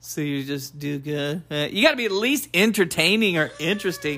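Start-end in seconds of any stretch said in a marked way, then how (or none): 0.0-1.4 slow, dull, boring, lifeless delivery. Imitating how another speaker sounded while giving advice: imitating a boring delivery. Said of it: "but you were boring".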